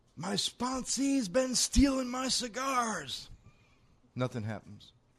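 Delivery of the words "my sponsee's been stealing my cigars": very high scream with words stretched long. Telling a joke where the sponsor screams out an accusation: imitating a scream. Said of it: "He screams out".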